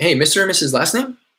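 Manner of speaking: pitch rises at the end, on last name. Showing how to greet someone on a call: upward inflection at the end. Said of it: "saying it in that manner".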